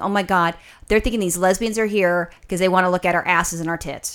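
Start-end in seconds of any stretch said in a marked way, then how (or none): none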